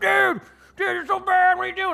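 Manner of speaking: piercing, very high, very loud raging scream. Retelling a teammate's insult in a stadium game: imitating someone screaming. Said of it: "immediately somebody screaming, like".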